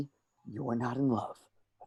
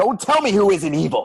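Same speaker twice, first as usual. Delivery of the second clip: deliberate, very loud, angry, furious snapping outburst; 8 semitones higher, 8 dB louder than usual. Arguing with someone who defends the people he calls evil: angry outburst. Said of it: "okay, relax".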